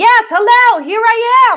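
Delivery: controlled yell, steady, loud and drawn out. Demonstrating how a high belt should feel in the speaking voice, controlled yell. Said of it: "like I'm kind of yelling out in a very controlled way".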